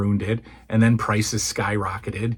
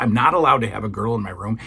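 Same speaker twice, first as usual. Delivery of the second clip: normal talking voice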